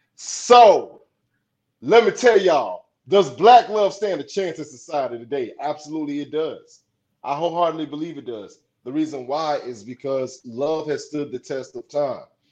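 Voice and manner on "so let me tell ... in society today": full public-speaking projection, loud. Speaker answers a question for everyone, using a projected voice. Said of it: "I'm about to use my projected voice then".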